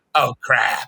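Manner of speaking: gravelly voice, pushed out forcefully. Quoting his line as the aliens attack: gravelly Harvey Fierstein voice. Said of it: "the guy with the gravelly voice that talks like this".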